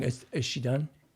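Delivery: ordinary talk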